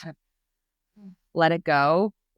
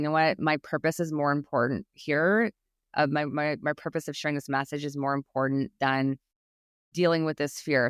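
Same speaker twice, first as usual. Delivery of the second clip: usual speaking voice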